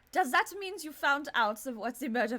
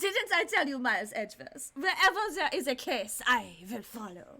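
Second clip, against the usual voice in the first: fake, put-on German accent, in character. Voicing a character's dialogue, the speaker speaks in a put-on German accent. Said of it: "since I've done the German thing".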